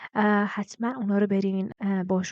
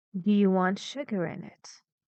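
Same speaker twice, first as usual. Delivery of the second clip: pitch falling from sugar onward. In an intonation lesson, the speaker says the question with pitch falling from sugar. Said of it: "it goes lower and lower and lower till the end of the sentence".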